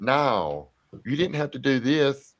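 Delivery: exasperated protest. Retelling a man's overheard words, imitating a frustrated man.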